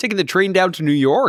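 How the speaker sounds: put-on Canadian accent. After the other speaker's attempt, trying a line in a canadian accent. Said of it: "That's very good".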